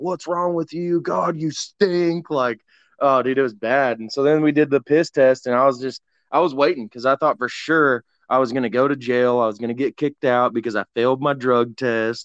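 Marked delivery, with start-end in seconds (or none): 0.0-2.3 mock screaming, high-pitched and scolding. Retelling how they came over to the speaker, imitating someone screaming. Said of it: "start screaming at me like".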